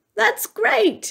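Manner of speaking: very high, delighted, gleeful cry. After the butler chops the top off the too-tall tree, he is crying out with glee. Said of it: "cried with glee".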